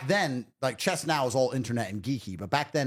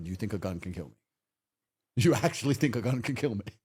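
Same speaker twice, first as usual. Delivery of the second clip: mock talking while laughing, pitched lower; 3 semitones lower than usual. Retelling how the speaker's dad reacted to people pointing guns, imitating laughing while talking. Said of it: "he laughed to go".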